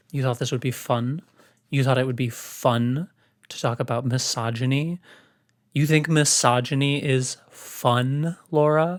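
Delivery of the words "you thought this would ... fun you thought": usual speaking voice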